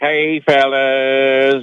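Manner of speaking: caller voice with hello and fellas drawn out. Greeting the radio hosts as a caller, in Steve from Lexington voice. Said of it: "That's my Steve from Lexington voice".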